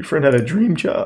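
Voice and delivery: voice cracking and breaking mid-line. Responding to someone whose friend worked for Popoff, voice cracking. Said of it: "Voice crack".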